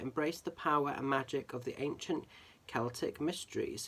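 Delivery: ordinary delivery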